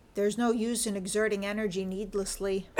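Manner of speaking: ordinary talk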